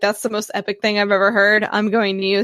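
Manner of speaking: ordinary talk, nothing marked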